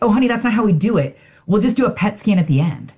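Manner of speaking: condescending, patronizing tone. Retelling what the oncologist said: imitating a condescending tone. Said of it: "the oncologist was so condescending that she's like".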